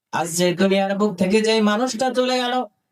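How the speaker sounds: normal talking voice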